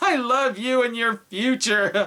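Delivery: put-on very high, tipsy, slurred drunk voice. Dubbing a movie character during a drinking game, drunk voice. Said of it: "I'm just really drunk".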